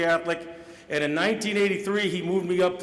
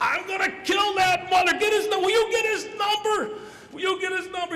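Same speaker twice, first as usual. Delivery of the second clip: put-on male screaming, much higher pitch; 13 semitones higher than usual. Retelling a football game story, acting out a man screaming at the guys: retelling a scream. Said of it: "He's screaming at guys".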